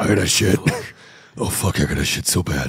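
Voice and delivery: very deep, very low put-on hero voice. Joking about someone perched atop Gotham talking to himself: put-on deep voice. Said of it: "he's still doing the deep voice to himself like".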